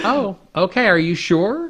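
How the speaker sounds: put-on loose, easygoing Southern accent. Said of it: "kind of a Southern accent sort of thing".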